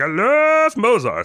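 very high, shrill, crazy little froggy voice. Act out him saying what he loves, slipping into a crazy little Kermit voice. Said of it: "this crazy little Kermit voice he slips into".

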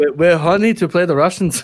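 terrible, bad, fake put-on Swiss accent. Quoting the swiss coach's interview after the game, terrible swiss accent. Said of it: "That was a terrible Swiss accent".

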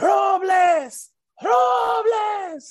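play-acted shrill, very high, stretched-out yell. At a playoff game, close to the field, calling a player's name: retelling a yell. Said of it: "So I'm just yelling".

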